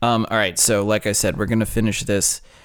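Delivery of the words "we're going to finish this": ordinary talk, nothing marked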